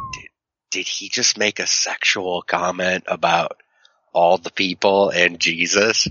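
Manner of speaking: whispering. Retelling leaning over to someone during a church service: imitating own whisper. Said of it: "Please stop whispering".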